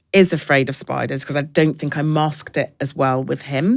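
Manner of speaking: ordinary talk, nothing marked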